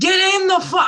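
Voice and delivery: all-out furious, high, loud screaming. Retelling what she screamed at the television last night, retelling a scream at the tv. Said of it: "I'm screaming at the television".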